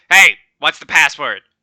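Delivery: calling out loudly. A game master voices a red cap calling down to the players at the gate: shouting down from above. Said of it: "looks down at you and shouts out".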